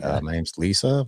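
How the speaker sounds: confused-sounding voice. Retelling a stranger's reply when asked her name: imitating someone puzzled. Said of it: "super puzzled".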